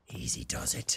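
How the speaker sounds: barely audible, very quiet, hushed whisper. Gamer hears people walking around nearby, whispering.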